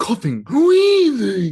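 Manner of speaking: silly, high, loud, slow cartoon squeal.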